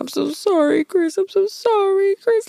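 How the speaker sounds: play-acted tearful sobbing, very high and slow. Retelling a scene, the speaker imitates Brittany apologizing to Chris while crying. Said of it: "and she's crying".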